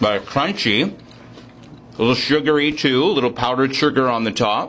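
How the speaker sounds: speaking with mouth full, chewing. Taking a bite and describing it for listeners: talking with mouth full. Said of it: "Mom wouldn't be proud of me talking with my mouth full".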